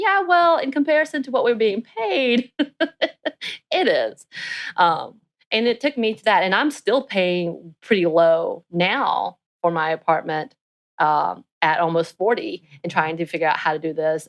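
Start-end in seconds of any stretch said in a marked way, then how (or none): 0.0-4.3 high, laughing, sarcastic tone. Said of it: "I was like".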